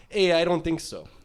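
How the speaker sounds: put-on Canadian accent. Voicing a Canadian whiskey's answer, speaker tries an attempted Canadian accent. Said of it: "but in a Canadian accent".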